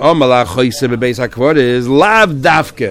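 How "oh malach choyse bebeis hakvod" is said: usual speaking voice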